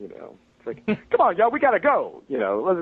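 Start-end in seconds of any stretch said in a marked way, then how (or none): 1.1-2.2 very loud, very high, belted comic shout. Speaker recalls his work on the Clerks animated series, doing an Eddie Murphy impression. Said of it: "just an Eddie Murphy impression".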